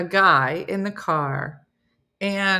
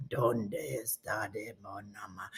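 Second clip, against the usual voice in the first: very low, very hushed, slow creepy murmur; 10 semitones lower, 15 dB quieter than usual. Imagining talking to a Spanish speaker, imitating the creepy Duolingo man voice. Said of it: "I'm gonna go into this".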